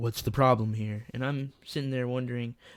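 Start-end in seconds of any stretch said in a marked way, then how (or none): 0.0-1.1 put-on strict, no-nonsense stern tone. Quoting the speaker's uncle walking in, imitating uncle's strict voice. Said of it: "he says it in a strict voice".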